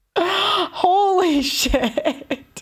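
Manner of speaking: laughing through the words. Reacting to a story about being stalked for ten months, laughing. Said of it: "Sorry, I'm laughing".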